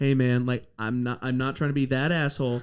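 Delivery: very quiet speaking. Retelling walking up to a player alone: retelling speaking real quiet. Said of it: "real quiet, I was like".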